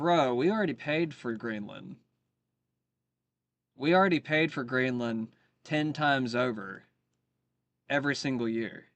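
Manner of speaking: ordinary delivery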